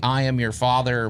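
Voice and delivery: ordinary talk, nothing marked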